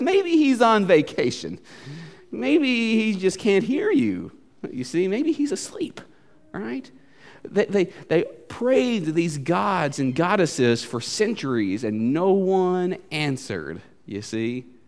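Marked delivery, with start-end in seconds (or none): 0.0-6.0 higher, softer, sarcastic taunting tone. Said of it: "the sarcasm that Elijah has".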